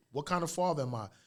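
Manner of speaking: ordinary talk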